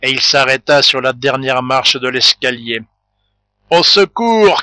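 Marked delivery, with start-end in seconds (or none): 3.7-4.6 choked, high, strangled shout. During a struggle in a cellar, a woman cries out, strangled cry. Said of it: "cria la Chouette d'une voix strangulée".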